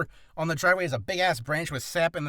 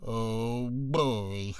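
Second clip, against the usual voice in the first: low, droopy cartoon character voice; 6 semitones lower than usual. Showing how he found he could talk like the character, Droopy voice. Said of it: "I could talk like Mister Droopy by just going".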